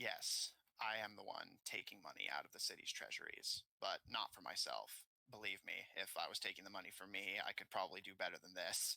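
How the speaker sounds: very grave, solemn, heavy, serious tone. A woman looks up at everyone in the room and speaks, very grave serious tone. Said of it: "speaks with a very gravely serious tone".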